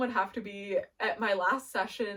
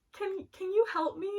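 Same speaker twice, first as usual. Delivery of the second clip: put-on very high-pitched tiny child's voice; 11 semitones higher than usual. Speaker imitates a child patting their arm, in a little child's voice. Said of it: "a little voice go".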